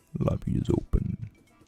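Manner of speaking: deep villainous voice. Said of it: "The deep villain Max's voice".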